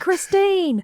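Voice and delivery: full-on, high-pitched screaming character voice. Recalling a running joke with a friend, screaming in Lee Russell's voice. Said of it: "screaming in Lee Russell's voice".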